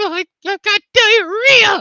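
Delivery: very high, very loud, drawn-out jittery creature voice. Giving a taste of a creature character who wants brains: nervous character voice. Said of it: "every now and then he's gonna be like".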